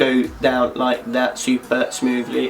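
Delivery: slow, odd, drawn-out talking voice.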